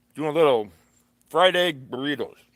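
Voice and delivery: talking with mouth full. Making breakfast on camera, talking with mouth full. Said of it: "I'm talking with my mouth full".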